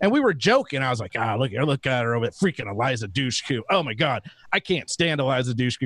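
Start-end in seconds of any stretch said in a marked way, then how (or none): 1.2-5.9 put-on muttering under breath, lower pitch. Retelling joking to a friend at a convention: muttering under breath. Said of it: "kinda under my breath".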